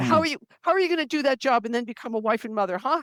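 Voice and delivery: intense, mock degrading, hammering, belittling tone. Retelling an older guy's lecture on women's careers: imitating an intense put-down. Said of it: "he put me down so intensely".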